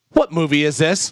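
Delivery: pointed, very accusatory, blaming tone. Retelling how a wife asked about a movie: imitating an accusatory question. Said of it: "very accusatory".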